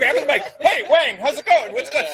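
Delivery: very high, loud, bumbling, clumsy announcer voice. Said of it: "like fucking JoJo the Idiot Circus Boy".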